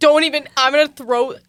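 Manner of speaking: very loud, high-pitched shouting. Reacting to teasing about convincing everyone they're dating, yelling. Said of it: "I'm yelling".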